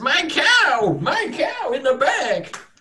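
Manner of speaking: very high, very slow yokel farmer drawl. Voicing a panicked farmer pointing to his cow: put-on farmer voice. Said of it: "this voice will never get old".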